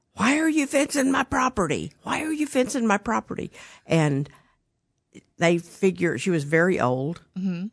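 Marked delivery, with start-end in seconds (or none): 0.2-3.5 put-on angry yell, shrill, pitched very high. Retelling what the lady behind the new buyers kept yelling, imitating someone yelling. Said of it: "kept yelling at them, going".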